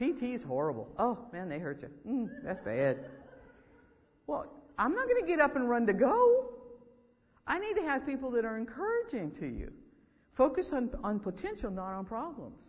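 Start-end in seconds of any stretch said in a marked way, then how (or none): 0.0-3.0 low, gloomy, wallowing tone. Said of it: "I don't want you to tell me".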